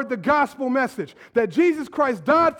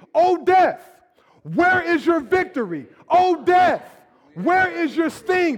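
declared with full conviction, meaning every single word; 4 semitones higher than usual. Leading a congregation in a verse after stopping them: saying it like you mean it. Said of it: "we say it like we mean it".

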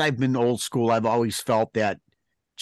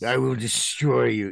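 put-on western European villain accent. Praising the show's Kingpin, the speaker quotes him in Kingpin's Western European voice. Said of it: "that like Western European voice".

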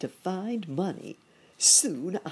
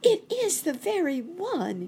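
delighted, joyful, drawn-out cry, very high pitch; 13 semitones higher, 4 dB louder than usual. A lost chipmunk answers the old rabbit holding out a penny, crying out joyfully. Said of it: "cried the lost chipmunk joyfully".

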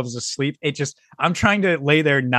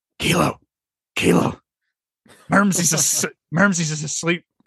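put-on drunken, slurred-style loud whisper. Retelling how a friend sneaked in at night: imitating drunk loud whispering. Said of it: "Doing that drunk, loud, like, whispering".

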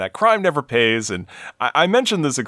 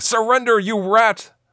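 high, play-acted, heroic superhero yell; 10 semitones higher than usual. Recapping a Batman episode as Batman jumps in, retelling a yell.

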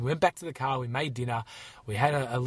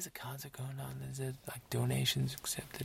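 very quiet, hushed whisper; 10 dB quieter than usual. Retelling what the desk worker said at a loud concert: imitating someone whispering. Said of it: "the guy behind the desk was whispering".

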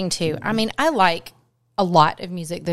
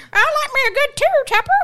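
very high, swooping put-on old-person voice; 6 dB louder than usual. Joking about own old-fashioned taste in music: put-on very old person voice. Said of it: "I sound a hundred years old".

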